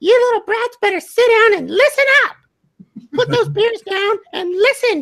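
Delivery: put-on kids' puppet character voice. Speaker addressing the kids in the voice he practiced, Elmo voice. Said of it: "You guys are still going to listen to Elmo voice".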